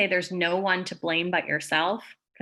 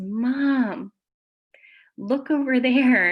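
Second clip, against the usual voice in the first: put-on very slow, sweet, pitched-up little kid voice; 6 semitones higher, 4 dB louder than usual. A mother retells her son calling her attention near a volcano, in Cooper's sweet little voice. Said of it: "Cooper's sweet little voice, he goes".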